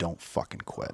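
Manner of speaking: very quiet, breathy, barely audible whisper. Retelling what the drill sergeant said at graduation, imitating a whisper. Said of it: "leans in and whispers to me".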